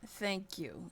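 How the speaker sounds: forced, strained speech through clenched, gritted teeth. After Sandra looks over, Kanan answers the player through gritted teeth. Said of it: "he's just saying this through gritted teeth".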